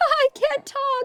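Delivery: very high voice, words broken up by giggling. Retelling cracking up while changing a diaper: imitating laughing while talking. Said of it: "I just start cracking up laughing".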